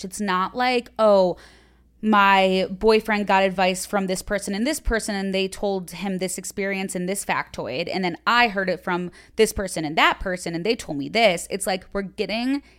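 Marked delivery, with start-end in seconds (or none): none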